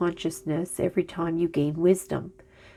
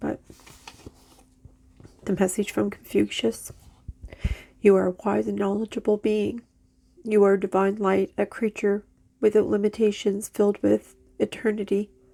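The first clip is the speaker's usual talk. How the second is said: weeping, tearful, crying voice; 3 semitones higher than usual. Delivering a message from confucius to listeners, crying while speaking. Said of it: "I don't know why I'm crying".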